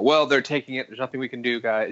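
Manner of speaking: ordinary talk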